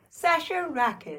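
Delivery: soft, bright, chipper, cheery computer voice. Asked to just say her own name for the bit, cheery. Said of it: "I'll say my name cheerily".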